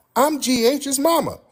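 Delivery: very high-pitched voice, pushed way up. Retelling a woman's reply after pulling over, in a very high-pitched voice. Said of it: "She said in a very high-pitched voice".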